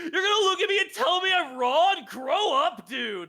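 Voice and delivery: shrill, very high, loud shout. Retelling how the dude in an argument started: imitating someone yelling. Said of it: "the dude started, like, yelling".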